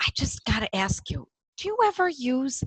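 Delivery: hushed whisper. Retelling a question he asked an older homeopath he knew, whispering. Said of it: "and I was whispering".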